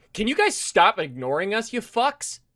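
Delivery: loud, high shout, as if from far away. Voicing a character who yells at the group from across a field: shouting at the group. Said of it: "a very familiar voice shout out at you".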